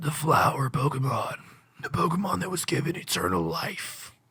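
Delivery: low, rough, gravelly growling voice. Voicing lines about a Pokemon, finding it hard: gravelly voice. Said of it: "that's all I have to say in that voice".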